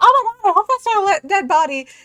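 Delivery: shrill blurt, very loud and high. Voicing a character who turns and says something really loud. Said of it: "You say really loud".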